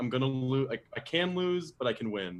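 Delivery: ordinary delivery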